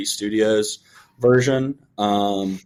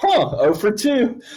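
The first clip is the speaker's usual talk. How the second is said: high, forced, mock upbeat cheerful tone. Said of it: "I'm like".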